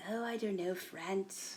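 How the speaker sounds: put-on mock British accent. Acting out an imagined weird son answering his mother, put-on british accent. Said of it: "he talks like in a British accent".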